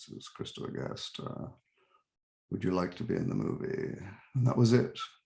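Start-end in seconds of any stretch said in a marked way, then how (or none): 0.0-4.0 low-key flat deadpan, very quiet, barely above whisper. Retelling a phone call offering a movie role: imitating Christopher Guest's deadpan low-key voice. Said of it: "in his very deadpan, low-key voice said".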